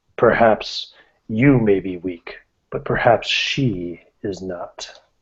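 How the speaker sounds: demon voice from within. Voicing the demon within the character, in a booming demon voice. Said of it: "the demon voice will boom again".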